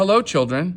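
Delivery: sugary, high, sweet, kindly teacher voice. Reading a story aloud, someone greets the children: sweet voice. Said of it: "someone said in a sweet voice".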